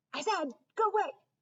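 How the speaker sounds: urgent barked delivery. Narrator faces off with a screeching squirrel: urgent bark. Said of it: "I bark with more urgency this time".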